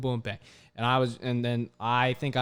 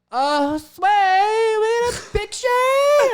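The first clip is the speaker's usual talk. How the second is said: put-on very high, very loud, very slow drunken voice; 10 dB louder than usual. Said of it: "drunk, and they'd be like".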